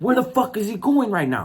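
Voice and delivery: high-pitched, aggressive, forceful tone.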